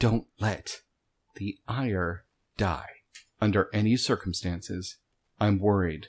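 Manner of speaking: hushed, whispering voice. Whispering a secret warning to the group while drawing a map: whispering. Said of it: "I'm whispering it".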